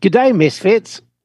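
put-on New Zealand accent. Host reads a listener's email aloud, in a New Zealand accent. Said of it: "In the accent".

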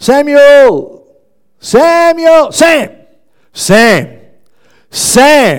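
very loud drawn-out shout. A dad acts out calling his son samuel, retelling shouting for sam. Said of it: "You don't have to shout".

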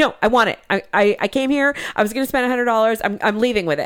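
super defensive, insistent voice. Retelling a woman's reply after offering her money back, imitating someone being defensive. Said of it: "she's super defensive".

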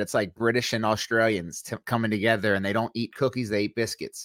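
plain

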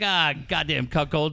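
plain

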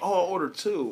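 high, pointed, loaded, acted-out sarcastic jab. Retelling a woman walking off with one sandwich missing, retelling a sarcastic remark. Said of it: "I was trying to be sarcastic".

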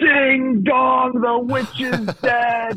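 shrill, very high, screeching scream. Acting out Mark Boyle's call after a missed shot, imitating a screeching scream. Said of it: "just in a screeching scream yells".

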